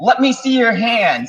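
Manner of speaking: loud, high-pitched yelling. Retelling what a woman yelled at a figure she saw, retelling a yelled command. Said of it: "yelled at him".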